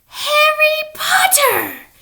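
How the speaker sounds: very high-pitched, loud creature voice. Reading a novel aloud, the narrator voices the creature greeting Harry: high-pitched Dobby voice. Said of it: "in a high-pitched voice".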